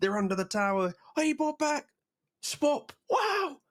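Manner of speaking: high, excited mock reactions, squealed out.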